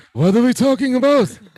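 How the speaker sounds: very high, loud politician voice. Imitating Biden in a photo; Biden impression sounding like Bernie. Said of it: "Why does he sound like Bernie?".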